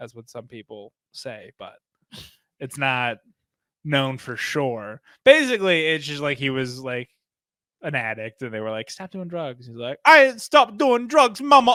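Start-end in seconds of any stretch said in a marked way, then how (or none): 10.1-11.8 put-on Jamaican accent, very high and loud. Retelling an addict's reply when told to stop doing drugs; imitating Chad's Jamaican accent. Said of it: "talks with a Jamaican accent".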